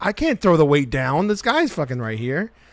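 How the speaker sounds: ordinary talk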